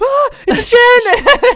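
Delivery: high, loud scream in terror.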